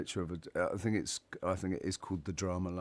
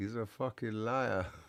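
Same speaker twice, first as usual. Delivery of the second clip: punchy shouted outburst, a mild yell, reined in; 3 semitones higher than usual. Telling a joke, voicing the punchline line: yelling. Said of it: "he yells".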